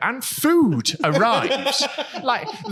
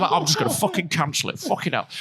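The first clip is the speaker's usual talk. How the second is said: normal talking voice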